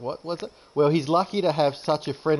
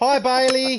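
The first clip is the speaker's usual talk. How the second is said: very high-pitched, loud shout; 9 semitones higher, 5 dB louder than usual. Greeting Bailey, who yelled hi from three rooms away, shouting. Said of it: "I don't know why I'm shouting".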